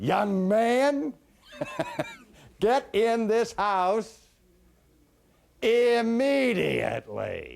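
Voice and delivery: very high, loud calling building to full crescendo. Recalling a mother calling her son in for dinner, retelling her crescendo call. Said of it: "when it reached a crescendo".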